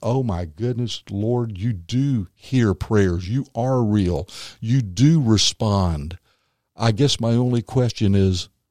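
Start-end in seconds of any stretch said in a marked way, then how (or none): 0.0-6.2 put-on slow crying, sobbing like a baby. Retelling finding the lost ring and praying: retelling crying like a baby. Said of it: "was crying like a baby, going".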